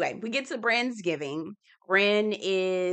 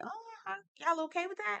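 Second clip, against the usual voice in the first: very high, soft, squeaky mock disbelief. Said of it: "I'm like".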